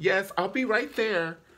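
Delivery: professional polite work voice, very high and loud. Retelling how a mother switches from scolding to answering politely: imitating mom's work voice.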